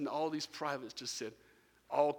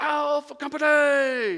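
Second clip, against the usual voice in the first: booming, bellowing parade-ground drill sergeant shout; 12 semitones higher, 11 dB louder than usual. Retelling a voice calling out to the gathered families, retelling a bellowed call. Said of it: "it just bellowed".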